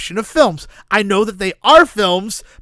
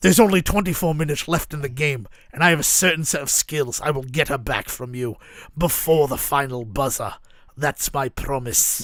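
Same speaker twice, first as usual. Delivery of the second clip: put-on Irish accent, lower and quieter; 6 semitones lower, 6 dB quieter than usual. Acting out the movie Taken set at a basketball game: Liam Neeson voice. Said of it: "Your Irish accent is astounding".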